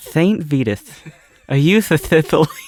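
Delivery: put-on boxer voice with a lisp. Told to just do the voice now, say the line in a Mike Tyson voice. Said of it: "Just do Mike Tyson voice now".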